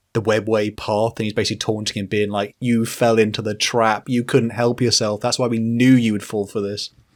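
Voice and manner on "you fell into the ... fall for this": normal talking voice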